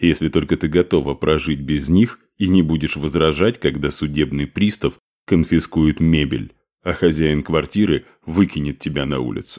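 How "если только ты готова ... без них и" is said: usual speaking voice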